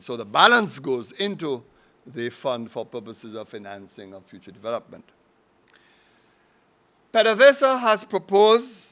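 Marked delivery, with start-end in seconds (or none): 7.1-8.9 proposed said high, loud and slow. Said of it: "I underline the word proposed".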